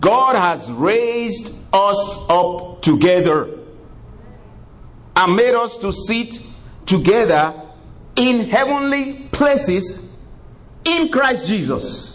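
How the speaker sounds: slow, deliberate, high-pitched reading, every word drawn out.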